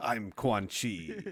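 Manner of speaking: grand, fully dramatic delivery. Joining in imitating Quan Chi: Quan Chi impression. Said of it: "do an impression of somebody".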